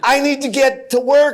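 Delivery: high scream. Retelling how the company owner screamed at flight attendants: imitating someone screaming. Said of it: "he kept screaming at the".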